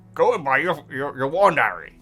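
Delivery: rough, gruff, growling character voice. A speaker quoting Philosopher's Stone to listeners does a Hagrid voice. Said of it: "that wasn't too bad a voice".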